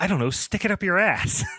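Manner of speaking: offhand yet aggressive. Quoting a character's reply to one of his lackeys, mock-aggressive yet nonchalant. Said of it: "so aggressive, but also so nonchalant".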